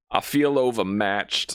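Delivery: voice welling up, almost crying. Describing a movie scene, quoting Tommy Lee Jones imitating his near-crying delivery. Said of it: "he almost sounds like he's gonna cry".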